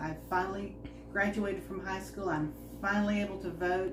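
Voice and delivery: ordinary delivery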